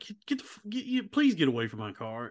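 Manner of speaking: flustered, stammering, tripping over words, pleading tone. Telling a story, the speaker quotes a man asking a woman off his car: imitating a flustered plea. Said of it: "And he's like".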